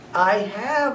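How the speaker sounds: squeaky, tiny, high little voice. Reading the narrator's reply to a visitor at the cage, squeaking. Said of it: "I squeaked".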